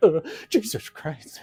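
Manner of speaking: high, loud, slow, panicked yelp.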